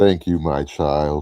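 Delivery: very low, deep, put-on divine voice. Repeating thanks to the men, this time in a God voice. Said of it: "I gotta say it in my God voice".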